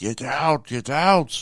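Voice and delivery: mock very slow, high, drawn-out scolding yell. Retelling how a woman screamed at the speaker to get out, mock yelling. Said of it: "she was just yelling and screaming at me".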